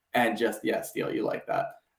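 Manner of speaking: plain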